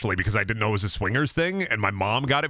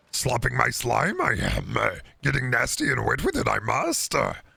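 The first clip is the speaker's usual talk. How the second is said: put-on little creature voice. Answering thanks while speaking as Yoda: Yoda voice. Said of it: "the Yoda voice makes me laugh".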